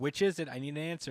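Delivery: ordinary delivery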